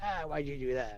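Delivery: sharp, snapping, snappish tone. Speaker retells how a woman snapped at a man; retelling a snappish retort. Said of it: "and she snapped at him".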